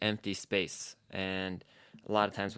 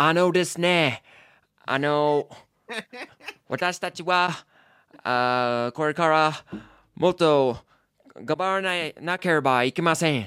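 put-on strong American accent in Japanese, higher, much slower; 7 semitones higher, 9 dB louder than usual. Imitating a man who spoke Japanese, using his strong American accent. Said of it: "he had a very strong American accent".

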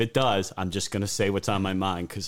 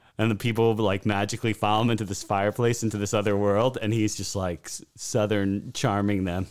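ordinary delivery

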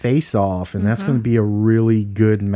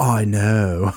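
imitated surfer dude voice. Retelling an actor's line from a movie: imitating a surfer voice. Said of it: "delivering the previous line in a surfer voice".

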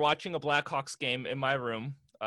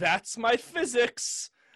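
mock proud child voice, higher; 9 semitones higher than usual. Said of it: "so proudly".

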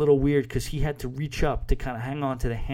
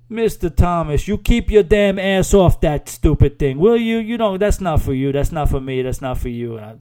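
very loud, horrible put-on Jamaican accent; 4 semitones higher, 10 dB louder than usual. Speaker retells Simon's answer when asked about the zip line, horrible Jamaican accent. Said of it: "That's a horrible Jamaican accent".

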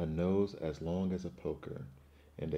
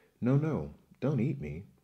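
high, raised, pleading begging voice; 7 semitones higher, 7 dB louder than usual. The little billy goat pleads with the troll on the bridge, begging. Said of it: "begged the little billy goat".

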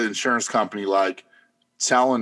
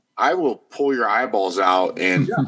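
ordinary talk

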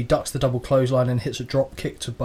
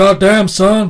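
very loud, pitched-up, belted-out wrestler bark; 7 semitones higher, 9 dB louder than usual. Trying a better impression after a failed one: Stone Cold Steve Austin impression. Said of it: "That's a bit better into it".

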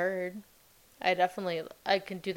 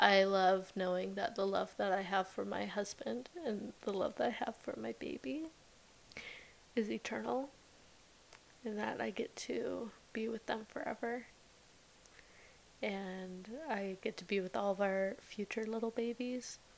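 tearful speech, crying while talking, quieter; 3 semitones higher, 8 dB quieter than usual. Sharing what they love about their faith, crying while talking. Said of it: "oh my goodness, I'm crying".

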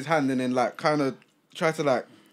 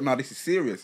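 ordinary delivery

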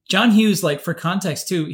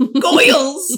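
put-on excited comic voice, higher and louder; 10 semitones higher, 6 dB louder than usual. Imitating own childhood excitement in a Jerry Lewis voice. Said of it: "That's my Jerry Lewis".

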